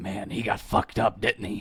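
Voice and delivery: throaty, low, guttural character voice. A tabletop player speaks as Shambles at the table, guttural Shambles voice. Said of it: "Shambles gutturally says".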